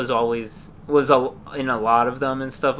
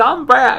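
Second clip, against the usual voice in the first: big, dopey, very high cartoon voice; 13 semitones higher, 8 dB louder than usual. Describing a cartoon parody, the speaker demonstrates the big dopey Brack voice. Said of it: "he's got the big dopey voice. He sounds like this".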